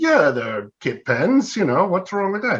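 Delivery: mock indignant tone. A pen maker retells answering a man who called his pens kit pens, mock-indignant reply. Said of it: "I got a little indignant".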